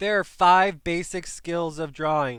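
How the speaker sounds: very loud, full-volume, high-pitched shout. A speaker addressing listeners at the start of a drawing lesson, yelling. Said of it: "Sorry for yelling".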